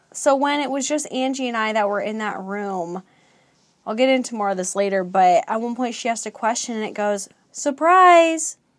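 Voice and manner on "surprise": man's voice pushed higher, very loud. Recounting what a voice said in a room, the speaker imitates a higher man's voice. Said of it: "still like a man's voice, but it was like higher".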